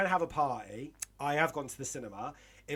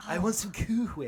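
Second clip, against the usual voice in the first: pitched-up, haughty, snooty little cartoon baby voice; 5 semitones higher than usual. Speaker shows how they do a cartoon character's voice: Stewie voice. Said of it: "And with Stewie, I have to kind of go like".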